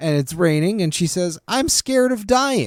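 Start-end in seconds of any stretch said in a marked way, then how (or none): 1.5-2.7 high, slow, cheesy line read. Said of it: "probably the cheesiest line".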